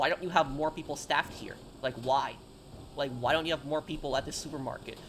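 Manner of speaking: ordinary talk, nothing marked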